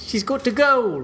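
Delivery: badly done, high-pitched, put-on New Zealand accent. Speaker tries an accent while telling about a guest's sister-in-law, bad New Zealand accent. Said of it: "I was warming up with a New Zealander accent".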